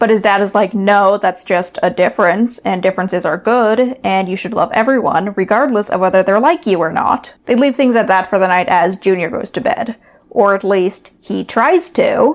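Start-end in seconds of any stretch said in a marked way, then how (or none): none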